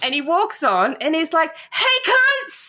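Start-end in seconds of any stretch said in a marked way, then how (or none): 1.7-2.7 put-on very high, boozy, drunken holler. Retelling a drunk passenger boarding the plane: imitating a drunk man. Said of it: "he was that fucking drunk".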